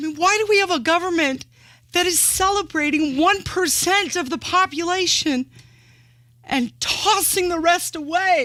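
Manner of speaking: high voice full of emotion. Speaking on a show watched on YouTube, in an emotional voice. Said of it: "the emotion in your voice".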